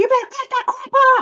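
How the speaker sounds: stern, very high-pitched yelling. Retelling yelling at young adults late at night: mom-voice yell. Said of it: "in my best mom voice".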